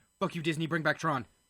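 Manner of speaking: blurted, off-the-cuff, throwaway outburst. Complaining to Disney about bringing back Tron, said really quickly. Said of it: "I said that really quickly".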